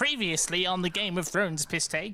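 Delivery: weird, scrunched-up, scrungly little voice. Opening a video recap, in a strange, scrungly little voice. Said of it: "What a strange, scrungly little voice that is".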